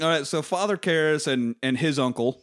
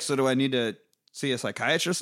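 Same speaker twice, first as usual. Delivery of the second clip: usual speaking voice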